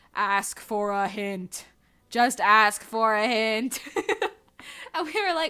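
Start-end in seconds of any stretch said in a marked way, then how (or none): 0.1-3.7 eerie, low, very slow loudspeaker drawl. Retelling what a man said over the loudspeaker, in a creepy voice. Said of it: "in like a creepy voice".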